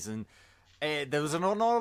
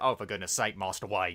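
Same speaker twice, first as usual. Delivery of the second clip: lower, put-on, exasperated butler voice; 7 semitones lower than usual. Comparing the actors who played Alfred, imitating Michael Caine as Alfred. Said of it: "Michael Caine, who's like".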